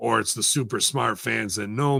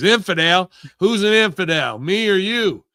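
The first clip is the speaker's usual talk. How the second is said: high, loud, put-on elderly woman's voice; 9 semitones higher, 6 dB louder than usual. Retelling what an old lady said in a grocery store: imitating an old lady. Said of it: "this old lady, fucking probably in her seventies".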